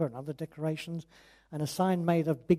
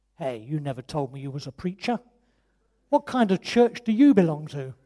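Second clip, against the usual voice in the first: mock slight hostility, louder; 6 dB louder than usual. Retelling a man's challenge to the preacher after his prayer, mock-hostile. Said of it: "with a trace of hostility in his voice".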